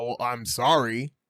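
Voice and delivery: patronizing, dismissive, insincere tone. Acting out someone told to apologize: imitating a condescending apology.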